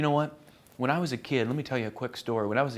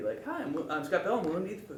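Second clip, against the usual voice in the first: cheerful, happy, soft, pitched-up voice; 5 semitones higher, 5 dB quieter than usual. Acting coach shows how to say the line as if happy: happy. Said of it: "now say it like you're happy".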